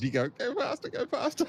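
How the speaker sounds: put-on very high, drawn-out, stretched yell. Retelling a moment from the race: retelling a yell. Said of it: "I was yelling at Paige".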